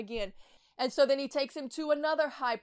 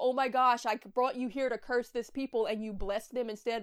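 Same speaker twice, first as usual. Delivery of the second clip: plain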